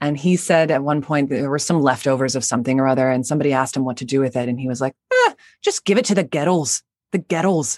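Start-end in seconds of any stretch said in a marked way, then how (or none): 5.1-7.8 put-on sing-song Glaswegian Scottish accent with swooping tune. Retelling what an acquaintance from Glasgow said about leftovers: imitating a Glasgow friend's Scottish accent. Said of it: "a guy that I knew who was from Glasgow".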